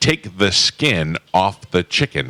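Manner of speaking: exaggeratedly crisp fake voice. Imitating T J Reeves when asked to: T J Reeves impression. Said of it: "you want me to get T J Reeves mouth on you?".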